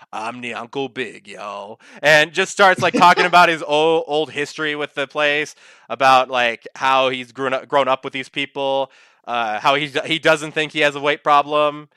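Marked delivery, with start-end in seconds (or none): 0.1-1.8 put-on jazzy voice, quieter and slower. Describing a fat cat character's own episode, doing a deep jazzy Nyanko Big voice. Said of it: "this deep, like, jazzy voice".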